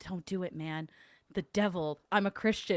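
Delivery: put-on stage whisper. Retelling how Colby whispered to Sam behind a bush: imitating Colby's whisper. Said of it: "whispering to Sam".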